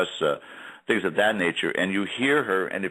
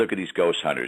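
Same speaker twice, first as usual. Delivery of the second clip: ordinary delivery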